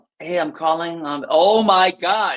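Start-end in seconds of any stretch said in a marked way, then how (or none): 0.2-1.3 overly chummy, friendly phone voice. Imitating agents on a prospecting call: imitating a too-friendly phone voice. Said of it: "you sound too friendly on the phone".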